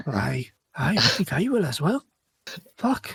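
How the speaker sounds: slow, chatty dwarf character voice. Voicing a dwarf chatting through the night: chatting dwarf voice. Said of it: "you can hear them chatting to each other like".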